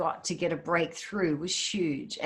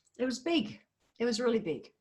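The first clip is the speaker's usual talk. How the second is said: overcome with feeling, higher-pitched voice; 5 semitones higher, 3 dB quieter than usual. Sharing a story about walking the Camino, the speaker is full of emotion. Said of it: "I'm so full of emotion sharing this".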